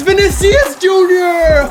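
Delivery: very high, very loud, cracking yell. Commentating a FIFA game, calling a player's name, with a voice crack. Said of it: "that was a horrible voice crack".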